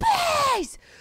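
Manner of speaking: acted-out very high-pitched guttural screaming. Retelling a woman begging a man not to leave: imitating guttural screaming. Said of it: "guttural screaming".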